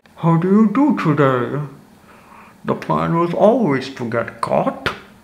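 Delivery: slow, muffled, dragging voice that is hard to follow. Showing how a movie character is hard to understand, in a hard-to-understand Bane voice. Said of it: "the tone he speaks... I'm probably making it sound worse".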